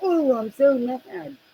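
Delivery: put-on very drawn-out, slow, sneering, childish little-girl voice. Mocking the other speaker's anger like a little girl: mocking a little girl voice. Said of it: "like a little girl".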